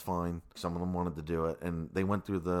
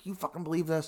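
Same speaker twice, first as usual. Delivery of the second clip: raised, high-pitched shouting yell; 10 semitones higher than usual. Retelling a scene where one character yells at another, imitating the yell. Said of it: "he's like yelling at Henry".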